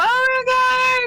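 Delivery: loud, high-pitched shouted call. Calling out for a missing companion in a game scene: yelling a name. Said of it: "I'm yelling at this point".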